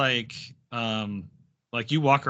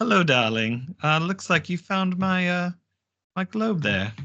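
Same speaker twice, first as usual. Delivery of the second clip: put-on older woman character voice, high; 6 semitones higher than usual. Game master voices an older tiefling lady approaching the players, older tiefling lady voice. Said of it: "an older tiefling lady come up to you".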